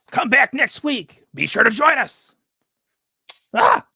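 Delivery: high, loud, drawn-out announcer sign-off. Doing an impression of a wrestling announcer signing off: Excalibur impression. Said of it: "That's my Excalibur impression".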